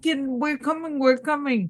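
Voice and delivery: high-pitched yell, calling out as if far off. Playing a character calling out to a distant person: yelling in character. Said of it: "I'm going to yell".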